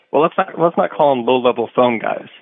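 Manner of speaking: ordinary delivery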